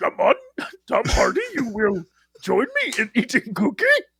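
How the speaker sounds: silly put-on creature voice. Performing dumb voices for the crew's show, now doing a Yoda voice. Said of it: "Now it's Yoda up there".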